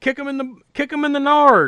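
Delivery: very high-pitched voice. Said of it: "and he says".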